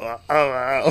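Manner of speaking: short, repeated gargled, bubbling ah sounds. Imitating a character making gargling noises after a cough: imitating gargling noises. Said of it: "gargling noises".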